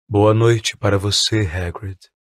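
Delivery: deep, low, sad, sorrowful voice. Narrator reads the centaur Ronan's greeting in Ronan's deep, sad voice. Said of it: "Tinha uma voz grave e triste".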